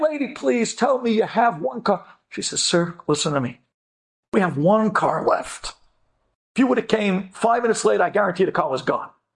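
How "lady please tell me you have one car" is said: acted pleading, begging voice. Retelling a man asking the rental clerk for a car: imitating someone begging. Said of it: "he's begging".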